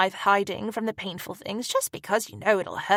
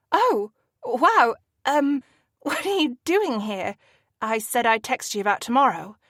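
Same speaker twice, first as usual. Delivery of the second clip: flustered stammering stutter, higher; 3 semitones higher than usual. Reading a story aloud, surprised by a visitor at the door: stammering. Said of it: "I stammer".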